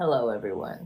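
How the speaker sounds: very low, deep put-on big-man voice. Imagining the ideal husband walking in: deep voice. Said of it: "his voice is all deep and he's like".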